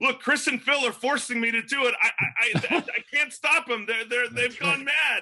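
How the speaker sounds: acted screaming. Describing his role in the movie, acting out his past protests, retelling it screaming. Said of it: "every time you talk, you're screaming".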